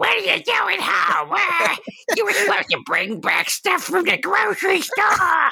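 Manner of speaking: horribly annoying put-on woman's voice, very high, shrill, creaky. Play the woman at home when the executioner comes in with his bloody axe, in a horribly annoying woman's voice. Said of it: "With her horribly annoying voice".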